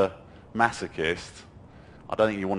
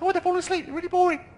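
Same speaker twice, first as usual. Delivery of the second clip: very high, squeaky cartoon voice. Showing how to defuse a mean thought by saying it in Mickey Mouse voice. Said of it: "Or I might do it Mickey Mouse".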